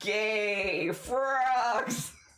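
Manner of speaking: spelled out word by word. Repeating a phrase for a listener, said really slowly. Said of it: "I'm gonna say it real slowly for you".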